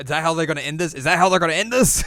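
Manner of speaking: frantic, very loud disbelief. Retelling how the other speaker reacted to the ending: imitating someone freaking out. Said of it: "I was freaking out".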